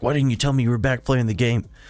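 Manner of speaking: put-on furious, accusing tone, high-pitched. Retelling a message from a brother: imitating an angry message. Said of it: "angry fucking message".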